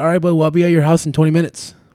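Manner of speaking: mock heated delivery. Speaker reenacts his reply to the man who had his phone, retelling being a little heated. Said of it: "so I was a little heated".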